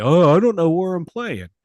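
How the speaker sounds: whiny crybaby voice, high and loud. Mocking a player who is unsure where he will play: mocking Broderick Jones as a crybaby. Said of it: "he's sounding like a baby".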